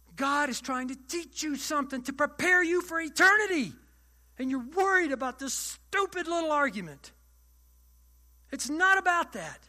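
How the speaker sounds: full-on loud, high-pitched yelling. Speaker lecturing a listener about a stupid little argument, yelling. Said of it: "Sorry for yelling".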